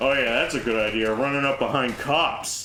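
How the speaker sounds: play-acted, heavy, snide, sarcastic jab. A parent comments as you run past toward the cops; retelling a sarcastic jab. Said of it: "one of them very sarcastically goes".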